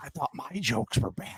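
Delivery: breathy, half-whispered, breathed-out voice. Quoting a movie line on request: Joker impression. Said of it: "so please do as many as you can".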